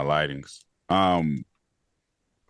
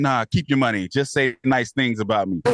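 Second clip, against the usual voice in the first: ordinary talk, nothing marked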